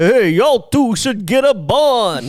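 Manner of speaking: slow, mean, high sneer. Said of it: "he's so mean".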